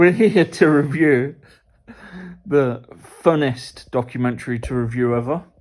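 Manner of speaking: openly sarcastic, dry, tongue-in-cheek tone. Introducing a documentary review, sarcastic. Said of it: "we're being sarcastic".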